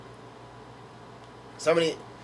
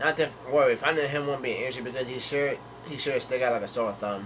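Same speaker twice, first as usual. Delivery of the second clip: plain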